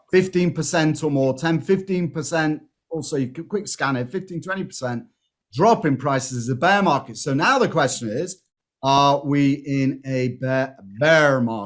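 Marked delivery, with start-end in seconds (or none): 8.8-11.6 put-on American accent. Explaining bear markets, asking the question aloud in a put-on American accent. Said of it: "He said with his excellent American accent".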